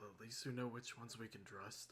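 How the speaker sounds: put-on very quiet hushed half-whisper. Speaking in character to a teammate during the game: half-whispering in character. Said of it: "[name] is gonna whisper to Ash".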